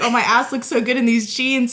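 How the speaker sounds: ordinary delivery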